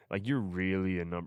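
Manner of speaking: put-on condescending voice. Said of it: "a condescending".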